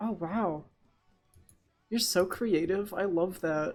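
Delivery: sarcastic, mocking tone. Reacting to friends suggesting a VHS player, sarcastic. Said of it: "That sounded really sarcastic".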